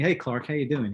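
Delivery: put-on slight hint of an American accent. Retelling a meeting after twenty-two years, quoting Mike: slight American accent as Mike. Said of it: "That's my slight American accent there".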